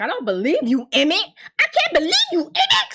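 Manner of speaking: very high, climbing, swooping angry outburst. Retelling a show scene where a woman accuses Emmett: imitating someone angry. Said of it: "she's all mad".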